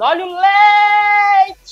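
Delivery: play-acted very high, shrill hawker's cry, leite drawn out. Retelling standing on a cart advertising milk: imitating own past shout.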